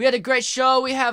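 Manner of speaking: imitated Turkish accent. Imitating a Turkish comedy host's intro: imitating a Turkish accent. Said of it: "I don't know what the Turkish accent is, but there's an accent".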